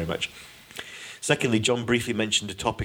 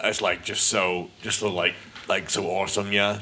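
terrible put-on American accent. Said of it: "That's terrible".

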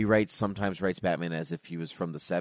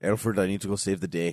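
put-on Scottish accent. Riffing on a Scottish version of Batman with a co-host, Scottish Batman voice. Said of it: "He's Scottish Batman".

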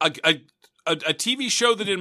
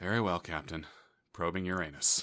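put-on computer voice, much lower and quieter; 11 semitones lower, 12 dB quieter than usual. Describing probing a planet in a game, doing the Mass Effect computer voice. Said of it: "the computer voice just goes".

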